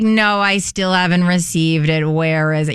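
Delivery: very flat, low, toneless monotone. Retelling a talk show guest's repeated complaint: Gabby Windey monotone voice. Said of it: "in very Gabby monotone way".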